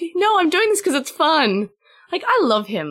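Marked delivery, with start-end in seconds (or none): 0.1-1.7 mock sarcastic, pitched-up voice. Retelling a reply from the episode: imitating a sarcastic reply. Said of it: "he's pretty sarcastic as well".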